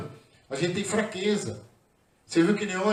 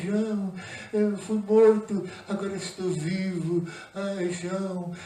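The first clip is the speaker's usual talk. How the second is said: weak, tiny, slow voice, "vivo" stretched. Speaker mocks how Jesus did not come to John; mock feeble little voice. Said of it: "ele não chegou com uma vozinha assim".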